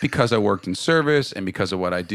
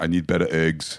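put-on French and New York accent, lower pitch; 6 semitones lower than usual. Giving a requested impression of dad complaining to a waiter: imitating dad's French-New York accent. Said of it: "he sort of sounds like Schwarzenegger".

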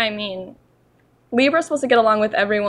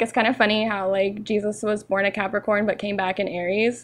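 usual speaking voice

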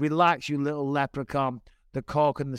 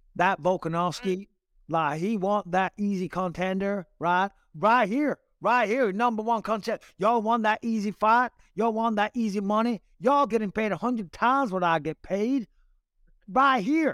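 put-on Southern accent, pitched up, calling out; 7 semitones higher than usual. After telling Harry he should have done the accent, show him what the man says in a put-on accent. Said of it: "You should have done it in the accent".

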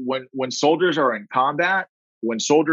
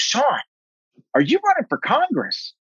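put-on very high, swooping yell; 11 semitones higher than usual. Retelling a phone call where mom starts yelling: imitating mom yelling. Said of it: "yelling at me".

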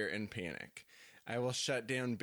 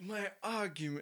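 put-on British accent, higher; 9 semitones higher than usual. Trying a line before giving up: attempted British accent. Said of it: "I wish that I could do British accents".

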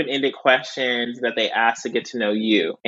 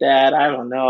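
put-on weepy, tearful, crying pleading; 4 dB louder than usual. Retelling a phone call to dad, imitating own past crying. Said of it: "I called my dad and I was crying".

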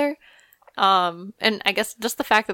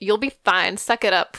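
sassy, attitude-filled voice. Retelling a moment on a show, imitating Kris Jenner's sassy tone. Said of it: "really sassy".

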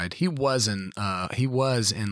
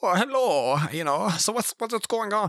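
put-on German accent, much higher pitch; 10 semitones higher than usual. Ranking favorite characters, the speaker does Nightcrawler's German accent. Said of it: "I love the German accent".

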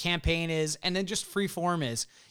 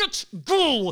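higher-pitched voice through clenched, gritted teeth; 11 semitones higher, 7 dB louder than usual. Urging him to go, imitating mom's gritted teeth. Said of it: "my mother gritted teeth of like".

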